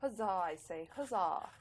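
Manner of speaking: received British English accent. Speaker jokes about being civil: Queen's English accent. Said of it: "That's my Queen's English accent".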